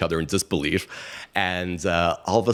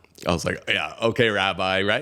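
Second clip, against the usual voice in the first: usual speaking voice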